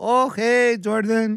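put-on slight Mexican accent. Retelling a golf round, the speaker quotes Carlos greeting Jordan: slight Mexican accent. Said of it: "He's got like a little Mexican accent".

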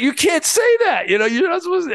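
very high, rushed, flustered, panicked speech. Retelling how a little kid's mom reacted to his remark, imitating a flustered mom. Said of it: "she's like totally embarrassed and she's like freaking out".

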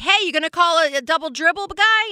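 high-pitched, yelled, complaining tone. Retelling a youth basketball game, imitating yelling at a referee. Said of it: "yelling at the ref".

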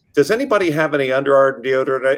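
ordinary delivery

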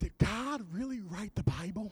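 very hushed, soft, breathy half-whisper. Telling a church joke, a first grade daughter asks her mother: retelling a child's half-whisper. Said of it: "she whispered to her mom".

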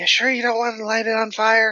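high put-on whisper. Voicing Scrag, answering another character in the scene: Scrag whispering back. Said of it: "Scrag kind of whispers back".

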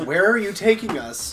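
put-on young woman's voice, high, loud shout. Voicing a young woman's voice from one of them: shouting young woman's voice. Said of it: "and it shouts".

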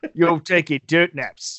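line read in a Cockney accent. Reading a character's line aloud after being asked about the accent, Dengar with Cockney accent. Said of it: "read his Dengar with like a Cockney accent".

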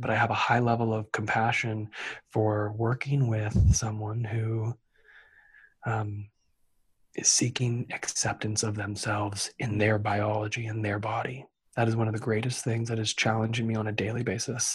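low, soft, hushed whisper. The speaker, sharing personal feelings, is whispering. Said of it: "I'm going to whisper".

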